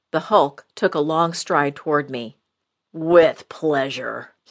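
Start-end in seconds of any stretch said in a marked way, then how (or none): 2.9-4.2 rumbling, thunderous tone. Told by his boss to attack, the big sidekick answers, in a rumbling voice. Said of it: "his voice rumbling like a winter mountain thunderstorm".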